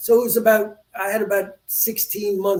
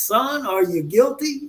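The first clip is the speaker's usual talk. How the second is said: slow, long, drawn-out Southern drawl; 4 semitones higher than usual. Quoting the jailer who pulled him into his room, the speaker does a drawling southern accent. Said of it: "this long drawn uh, uh, Southern accent".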